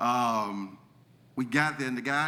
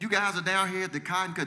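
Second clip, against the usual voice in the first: bad fake Southern accent, pitched up; 7 semitones higher than usual. Retelling what callers said on learning you're from Mississippi, in a bad southern accent. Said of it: "They started throwing out this southern accent".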